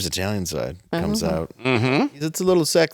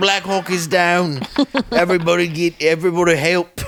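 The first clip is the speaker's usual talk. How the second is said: put-on Australian accent, higher and louder; 9 semitones higher, 4 dB louder than usual. Doing an impression of Matthew Marsden from a movie: put-on Australian accent. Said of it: "That's my impression of him".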